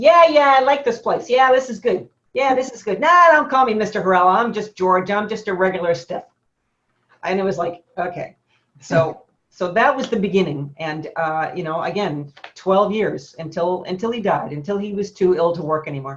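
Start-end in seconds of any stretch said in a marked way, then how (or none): 0.0-6.2 high, loud talk while chewing gum. Speaker recalls first meeting Mister Hurrell; George Hurrell impression. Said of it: "And he talked like this".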